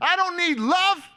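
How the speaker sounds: all-out scream, very high in the voice. Retelling resisting a group hug: imitating his own screaming. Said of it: "And I'm screaming".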